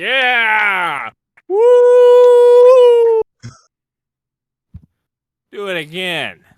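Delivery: loud, high, rowdy whooping cheer.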